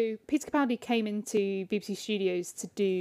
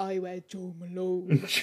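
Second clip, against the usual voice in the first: put-on slow, measured Scottish accent; 2 semitones lower, 3 dB quieter than usual. Retelling how Peter answered Luke's question about what he wears, do Peter's deep Scottish voice. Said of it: "in his deep Scottish voice".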